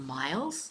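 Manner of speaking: doubtful tone with stress on 'miles'. Showing how word stress changes a sentence's meaning, stress on 'miles', doubtful. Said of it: "are you sure?".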